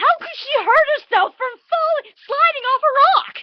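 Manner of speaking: furious outburst, very high-pitched and very loud. Speaker on camera, mid-complaint, losing temper. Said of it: "I lost my temper right there".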